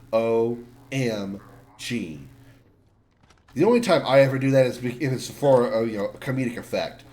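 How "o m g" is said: O, M, G said as spaced letters with pauses. Describing an annoying habit: pause between each letter of OMG. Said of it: "say it with pause between each letter".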